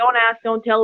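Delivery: ordinary delivery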